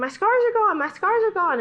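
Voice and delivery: put-on very high, loud, shrieking, screaming cry. Retelling a friend's outburst at a church service: imitating someone screaming. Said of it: "she starts screaming".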